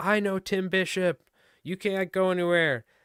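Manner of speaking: loud, high-pitched screaming. Retelling a guy who yelled at them in a beach parking lot, imitating his scream. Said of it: "this guy screaming at the top".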